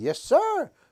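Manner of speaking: tiny, very high, pretend talking-ant voice. Retelling talking to ants as a boy, answering as the ant: pretend ant voice. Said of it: "I would pretend like the ant is talking back to me".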